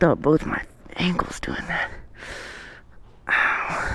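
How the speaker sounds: soft, pained whisper with groaning.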